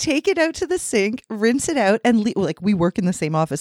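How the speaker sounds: high, exasperated voice.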